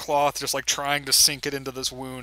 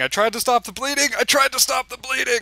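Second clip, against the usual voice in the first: very high, loud, shrill screaming shriek; 11 semitones higher, 6 dB louder than usual. Game master voicing the bard as the players come in, screaming. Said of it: "the bard's screaming".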